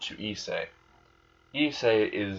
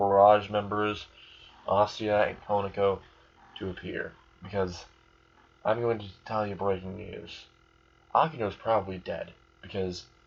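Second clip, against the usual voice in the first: ordinary delivery, nothing marked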